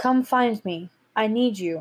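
calm, serene, gentle female voice. Narrating a voice heard in the characters' heads, calm and soft. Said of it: "It's calm and it's soft".

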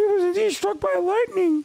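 high, strained put-on character voice. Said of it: "I can't do this voice".

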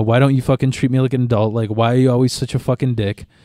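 angry, snapping outburst. Speaker recounting snapping at a man who scolded them over clocking in, retelling snapping at someone. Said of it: "I snapped on him".

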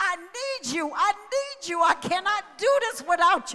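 anguished, desperate, begging pleading tone. Retelling being on your knees looking up, acting out your own scream.

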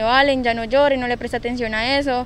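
ordinary delivery

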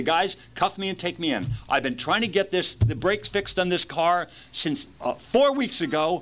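high, pumped-up voice flooded with adrenaline. Reenacting a Christmas Eve car story: mock adrenaline-filled voice. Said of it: "I'm talking kind of in this voice. There's so much adrenaline. I'm talking literally almost like this".

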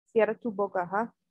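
ordinary talk, nothing marked

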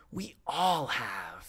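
whispering angrily. A functionary in a corridor answers the woman who says she has forgotten; angry whisper. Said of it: "he whispered angrily".

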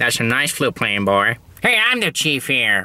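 cartoon sheriff character voice. Acting out a cartoon scene, addressing a boy with a flute: Chief Wiggum voice. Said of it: "Today's character voice is going to be Chief Wiggum".

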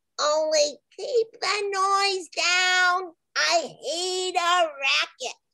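imp voice, drawn out, falling pitch. Narrator voicing the imp living at the bottom of a well, imp character voice. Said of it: "an imp lived at the bottom of that well".

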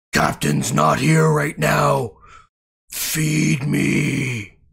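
loud, rough, creaky hungry maw voice. Voicing a belly maw on a body: belly maw speaking. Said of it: "the maw goes".

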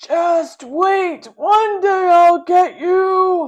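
scariest voice, very loud, high, teeth clenched. The narrator warns Cherry, who was chosen as the baby: scariest voice, clenched teeth. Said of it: "Using my scariest voice, I clench my teeth".

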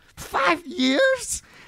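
very high falsetto, breaking, with vibrato. Retelling a man's line from a scene, imitating a cracking voice. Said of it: "he sounds like Cookie Monster".

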